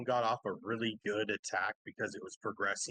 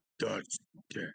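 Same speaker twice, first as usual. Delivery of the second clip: dramatic anime-style voice. Calling out a count in a game, in the most JoJo voice ever. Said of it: "the most JoJo voice ever".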